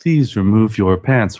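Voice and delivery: robotic, mechanical robot voice. Voicing an overly friendly talking couch: robot couch voice. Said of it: "Fucking robot couch voice is getting all fucking crazy".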